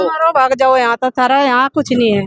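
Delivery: ordinary delivery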